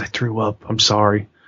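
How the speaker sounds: put-on whisper. Retelling how he leaned in to confess something, retelling a whisper. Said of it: "he kind of leans in and he whispers and he goes".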